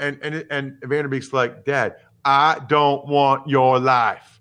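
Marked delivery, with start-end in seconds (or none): 1.6-4.2 very bad Texas accent. Recounting a film scene, quoting the son to his dad, in Van Der Beek's bad Texas accent. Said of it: "Vanderbeek with an all-time bad Texas accent".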